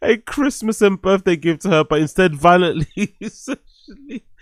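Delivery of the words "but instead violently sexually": giggly, half-laughing delivery. Reading out the lawsuit's claims: laughing while talking. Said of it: "I don't know why I'm laughing".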